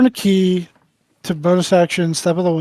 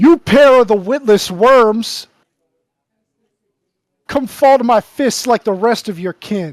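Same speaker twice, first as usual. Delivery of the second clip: taunting, in-character voice; 4 semitones higher than usual. Playing a character who yells a taunt at enemies to draw attention. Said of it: "I'm going to yell at them".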